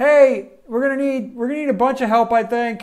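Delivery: very high-pitched, loud yell. Voicing a guard who yells down the hall for help: guard yelling for help. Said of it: "and yells".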